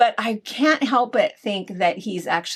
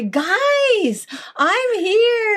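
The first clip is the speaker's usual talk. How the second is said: put-on, fake Austrian accent, very high pitched; 13 semitones higher, 4 dB louder than usual. Quoting a funny video creator: imitating a fake Austrian accent. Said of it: "his Austrian accent is not real".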